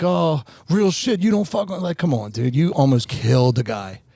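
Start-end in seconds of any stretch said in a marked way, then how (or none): 0.0-1.8 put-on loud yelling. Retelling what a fighter's dad shouted after a fight: imitating someone yelling. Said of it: "he's yelling".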